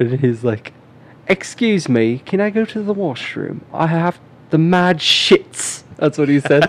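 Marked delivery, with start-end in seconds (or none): 1.3-5.8 horrible fake British accent, pitched higher. Retelling a math class story, the speaker quotes a kid in horrible fake British accent. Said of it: "everybody just did our horrible British accents".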